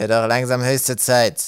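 loud, spiteful, poisonous, venomous tone. A narrator reads Ratz's remark to the group as he turns to go, venomous. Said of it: "bemerkte Ratz giftig".

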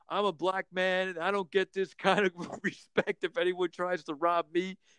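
play-acted, high, worked-up, fired-up rant. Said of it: "he's just screaming how".

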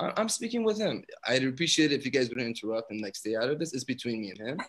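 cool, composed, unbothered, very calm, soft-spoken. Retelling a confrontation at an elevator, imitating a woman speaking very calmly. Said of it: "Like, very calmly".

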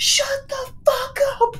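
high, piercing, loud top-of-lungs screech. Woken at six by the cats, the speaker is retelling a screaming shout. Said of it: "I literally screech at the top of my lungs".

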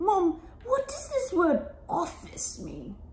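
put-on English accent, high and swooping. Playing an imagined future child asking Mum about a word, English accent. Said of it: "Why do you have to do it in an English accent?".

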